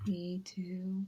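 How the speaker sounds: bored, hushed, flat, unenthusiastic, barely audible. Repeating her own earlier reply to her chat partner: mock-unenthusiastic. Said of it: "You sounded so unenthusiastic to talk to me".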